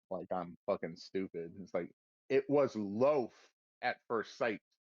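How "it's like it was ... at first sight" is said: usual speaking voice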